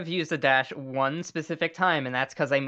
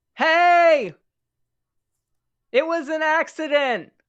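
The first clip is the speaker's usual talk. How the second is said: very high-pitched, loud, drawn-out yell; 13 semitones higher, 7 dB louder than usual. Asked for a plan, the speaker makes the voice boom and starts yelling. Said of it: "and then just yell".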